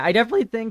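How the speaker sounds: voice breaking into high pitch. Talking through card choices for a deck, mid-sentence: voice cracking. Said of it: "my voice cracked".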